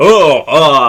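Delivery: loud, high-rising cartoon devil grunts. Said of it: "Rocky was just going".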